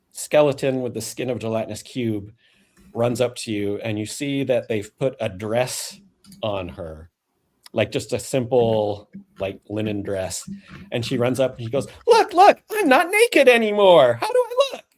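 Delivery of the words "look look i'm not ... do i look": giggly voice, higher and louder. Voicing a skeleton creature showing off her new dress: giggling voice. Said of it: "a whole twirl and is giggling".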